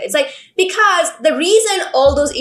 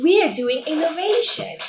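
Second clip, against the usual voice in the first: corporate commercial voice-over read; 4 semitones higher, 4 dB quieter than usual. Chatting about how some writing sounded like an ad, corporate advertisement voice. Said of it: "in that advertisement voice".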